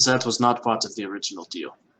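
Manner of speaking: put-on German-accented character voice. Voicing a character in the game scene: put-on German accent. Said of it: "He's supposed to have a German accent".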